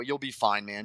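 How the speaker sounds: slightly condescending, patronising tone. Retelling what Harry Welsh tells Blythe: imitating Harry Welsh, a little condescending. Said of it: "Harry Welsh being a little condescending".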